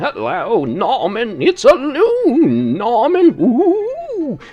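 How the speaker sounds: very slow, high, swooping sing-song, ooh drawn out. Showing the other voices that can be done: Katharine Hepburn voice. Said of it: "sort of like, you know, Katharine Hepburn".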